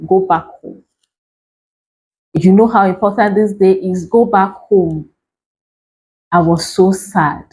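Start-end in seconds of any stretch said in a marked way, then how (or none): 0.1-5.1 mock angry, commanding, dismissive tone. Retelling a boss's angry call, imitating an angry boss. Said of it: "He just got angry and said".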